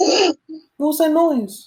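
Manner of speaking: high, frightened, startled character voice.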